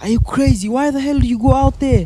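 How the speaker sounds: put-on high, furious, angry scolding scream. Retelling being scolded by parents for going out, imitating parents screaming. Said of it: "my parents was screaming at me like".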